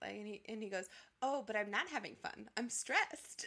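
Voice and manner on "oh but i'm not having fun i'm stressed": mock, weirdly happy, odd cheerful tone. Retelling a man's reply to a woman, imitating a weirdly happy tone. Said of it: "in a really, like, weirdly happy way".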